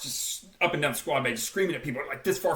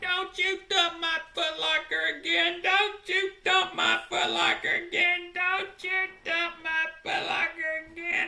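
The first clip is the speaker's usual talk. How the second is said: put-on mock crying, much higher, slower; 14 semitones higher than usual. Retelling how a recruit lay across his footlocker at the drill instructors, imitating someone crying.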